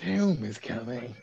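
chain-smoker voice, twenty-packs-a-day. Repeating a fox's line from a film for friends: fox voice like a heavy smoker. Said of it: "He sounded like he was smoking 20 packs a day".

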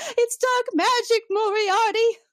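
long, very shrill, very slow, high shriek. Retelling a scene where a character cries out: imitating a scream. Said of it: "just a screaming".

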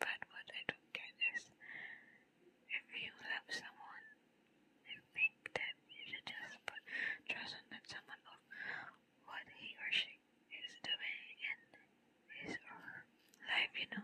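barely audible whisper, pitched very high. Recording a podcast while everyone else is asleep; whispering. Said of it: "So I'm just whispering cuz everyone is asleep".

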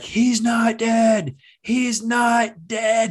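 high, very slow, very drawn-out scream. Retelling being taken into a haunted house as a child: imitating own screaming. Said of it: "And I'm screaming".

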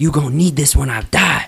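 high, loud screaming. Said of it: "screaming at her".

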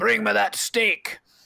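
gruff thug shout. Voicing a thug calling out near feeding hyenas: thug calling out. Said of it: "You can hear thugs calling out".

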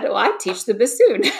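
mock-proud tone. Retelling answering a store manager's question about their instrument, retelling saying it proudly. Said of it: "I proudly said".

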